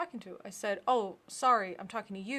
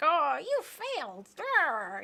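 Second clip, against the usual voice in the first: loud, high, slow, swooping, drawn-out cartoon-villain scolding; 7 semitones higher, 5 dB louder than usual. Describing a villain scolding failed henchmen: Rita Repulsa voice. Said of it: "Rita Repulsa starts hitting 'em".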